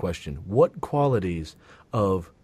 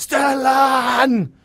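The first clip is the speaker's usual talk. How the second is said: long, very high, shrill, drawn-out yell; 14 semitones higher, 8 dB louder than usual. Saying they'd love to yell a name, then giving a yelled name. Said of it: "I would love to yell that name".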